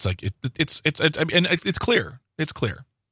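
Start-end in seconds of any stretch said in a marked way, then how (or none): 1.7-2.8 facetious, deadpan delivery. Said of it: "He says facetiously".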